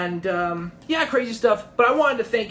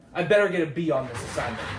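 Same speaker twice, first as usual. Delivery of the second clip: ordinary delivery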